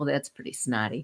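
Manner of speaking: low, quiet, flat, expressionless deadpan. Retelling their own remark that nobody answered, repeating it deadpan. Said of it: "Just deadpan like that".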